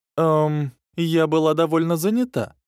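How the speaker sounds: embarrassed, sheepish hmph chuckle, high and slow. Answering a question about recent rumors, with an embarrassed chuckle. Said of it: "смущенно хмыкнула Тайван".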